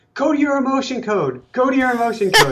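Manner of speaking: acted-out, very high, rushed, alarm-bell urgent tone. Retelling what someone kept repeating yesterday, retelling it in an emergency way. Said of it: "saying it in an emergency way".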